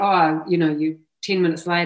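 ordinary delivery

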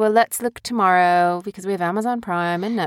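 plain

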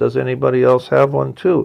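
normal talking voice

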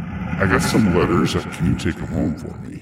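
spectral, ghostly, haunting voice. Telling a ghost-ship story, voicing the crew speaking from the ship: ghostly voice from the ship. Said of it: "The voice comes from the ship and it says".

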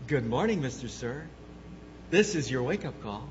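soft, sweet, honeyed, pleasant morning-call voice. Describing being woken by the phone, speaker imitates a pleasant wake-up voice. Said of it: "this wonderful, pleasant voice".

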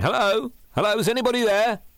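shrill, very high-pitched calling-out holler. Young [name] calls out to find anybody there, shouting. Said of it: "young [name]'s voice shouting".

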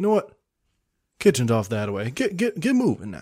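genteel southern man's voice. Playing a bit with another speaker, in a nice southern gentleman voice. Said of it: "he's a nice southern gentleman right now".

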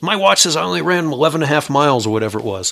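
put-on irritated tone. Retelling a half-marathon runner complaining to the race director, mock-angry. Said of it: "he was all pissed off".

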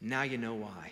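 very quiet, hushed, softly spoken delivery. Retelling a leader's reply to a silent room: imitating very quiet speech. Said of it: "he very quietly said this".

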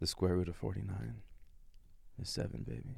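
seductive low voice. In a game where players must make a math fact sound hot, try to sound hot. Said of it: "Try to make that sound hot".

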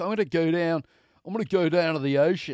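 put-on thick Australian accent. Quoting an Australian woman of 27, imitate her thick Aussie accent, coming out kind of Baltimore. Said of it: "She's got this like thick Aussie accent".

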